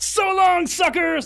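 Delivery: very loud, very high screamed shout. Telling how they grabbed a bus pass for theatrics and ran off, retelling a scream. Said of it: "I just screamed".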